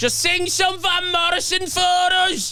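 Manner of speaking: play-acted, very high, slow drunk yell, long u sounds. Retelling how a drunk woman in the audience heckled: imitating a drunk woman screaming. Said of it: "just screamed".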